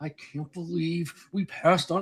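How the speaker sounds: put-on bottled-up rage, hushed and held in. Retelling Tom recording a podcast in his car without waking the baby; imitating Tom's hushed anger. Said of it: "he couldn't raise his voice".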